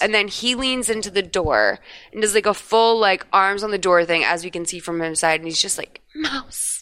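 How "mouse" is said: quiet, unvoiced, under-the-breath whisper. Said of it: "under his breath".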